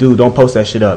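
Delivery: ordinary talk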